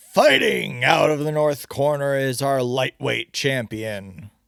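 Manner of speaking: growling ring-announcer voice. Reading an announcer introducing a fighter to the crowd: announcer growling. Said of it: "the announcer says in a growl".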